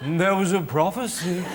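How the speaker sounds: put-on ancient, slow old man voice. Speaker shows how a prophecy should be announced, in a blind old man voice. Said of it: "Like you're a blind old man".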